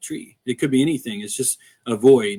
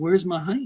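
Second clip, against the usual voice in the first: mock let-down, crestfallen tone with raised pitch; 5 semitones higher, 4 dB quieter than usual. Retelling a homeowner's question after finding little honey: imitating a disappointed homeowner. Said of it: "she was so disappointed".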